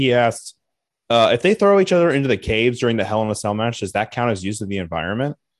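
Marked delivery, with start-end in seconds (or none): none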